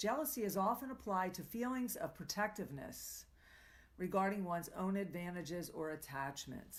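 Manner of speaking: ordinary talk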